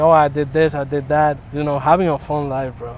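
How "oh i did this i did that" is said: ordinary delivery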